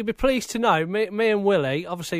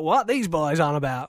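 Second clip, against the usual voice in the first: put-on American accent. Guessing how Randy in New York will react: imitating Randy's American accent. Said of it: "in an American accent".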